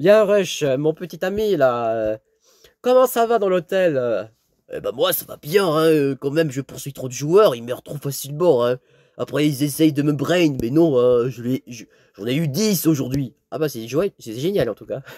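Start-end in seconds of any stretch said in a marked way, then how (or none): 4.7-13.3 game-style monster creature voice. Playing a game, the speaker answers as Rush: Rush voice. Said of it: "Je fais la voix de Rush".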